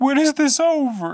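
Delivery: acted, very high, drawn-out, frightened little kid voice. Retelling a kid halfway through a movie: imitating a scared kid. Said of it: "he was just scared".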